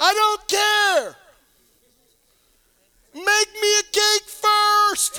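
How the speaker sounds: shrill, very loud, high shouting. Retelling the story of a man and a widow, the speaker yells out his line. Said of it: "And he yells out".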